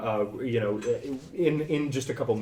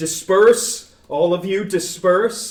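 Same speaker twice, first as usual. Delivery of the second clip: booming, very loud, commanding, authoritative voice; 8 semitones higher, 10 dB louder than usual. Telling a scene where a voice commands a crowd, authoritative commanding voice. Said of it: "with a much more authoritative authoritative voice".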